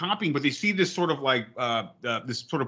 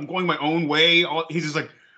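ordinary talk

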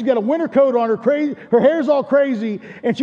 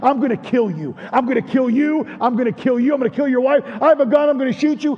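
put-on angry, threatening tone. Retelling a woman's threats to kill, imitating an angry threat. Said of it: "She was getting angry".

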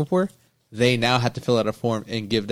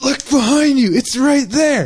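very high, very loud, shrill, furious yell; 9 dB louder than usual. Retelling a story about someone who wouldn't look, the speaker is retelling an angry shout. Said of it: "I got mad".

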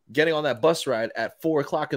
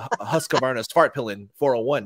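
ordinary talk

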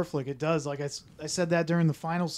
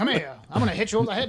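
put-on old-time vaudeville voice, higher; 4 semitones higher than usual. Imitating the voice acting of a movie dub: 1940s vaudevillian voice. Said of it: "the voice acting was".

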